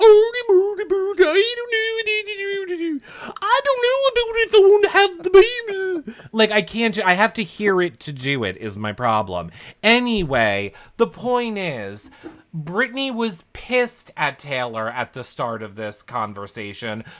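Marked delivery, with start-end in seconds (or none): 0.0-6.2 put-on very high, squeaky puppet chef gibberish, "baby" stretched out. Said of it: "more high-pitched when she does it".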